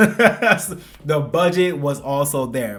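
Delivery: slow delivery, laughing through it.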